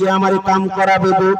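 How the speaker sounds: usual speaking voice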